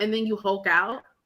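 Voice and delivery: ordinary delivery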